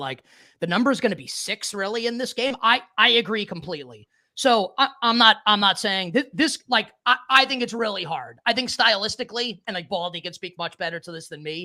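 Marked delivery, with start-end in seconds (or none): none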